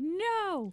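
high, loud yell of no. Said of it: "I'm like".

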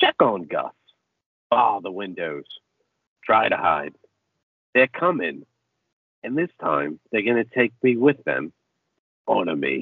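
low, eerie, creepy voice. Retelling a story, the speaker quotes a stranger lying on his back: creepy voice. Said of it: "in his creepy-ass voice".

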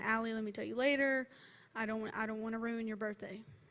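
imploring, pleading, begging tone. Retelling how a mom begged to explain later: imitating a begging mom. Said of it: "And she begged me".

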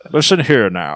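put-on Scottish accent in a film-star style. Joking about a hurricane story, the speaker does Sean Connery's Scottish accent. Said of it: "In his Scottish accent".

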